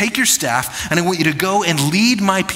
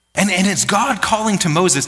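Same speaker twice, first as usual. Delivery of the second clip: ordinary talk, nothing marked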